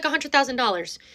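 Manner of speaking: ordinary delivery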